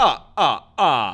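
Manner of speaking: loud belted ah, ah, ah. Acting out Dracula laughing after a line: Count from Sesame Street laugh. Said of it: "like the Count from Sesame Street".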